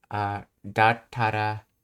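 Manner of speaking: plain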